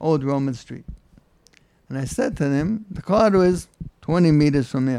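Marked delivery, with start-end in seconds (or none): none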